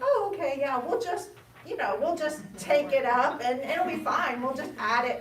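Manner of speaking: high, loud mock dismissive voice.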